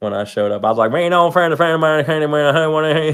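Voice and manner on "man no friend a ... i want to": put-on Creole accent, pitched up. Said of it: "that Creole dude off of Waterboy".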